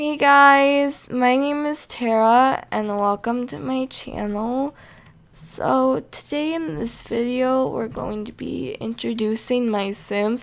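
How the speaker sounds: put-on very slow, flat, zero-enthusiasm delivery. Imitating how she talked in her first video: imitating own old flat unenthusiastic delivery. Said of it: "this is actually how I talked".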